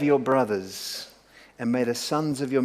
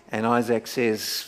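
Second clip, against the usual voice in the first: plain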